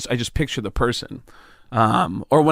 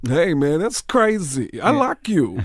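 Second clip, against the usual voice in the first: spaced-out voice, pitched up; 5 semitones higher than usual. Doing an impression of Tracy Morgan: Tracy Morgan impression. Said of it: "Tracy Morgan".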